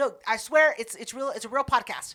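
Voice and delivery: normal talking voice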